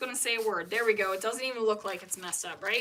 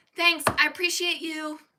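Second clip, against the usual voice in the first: hollow, insincere, high, loud fake gratitude; 6 semitones higher, 6 dB louder than usual. Complaining about people who say they appreciate you, mimicking them: mock-sincere thank-you. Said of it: "It sounds so fake all the time".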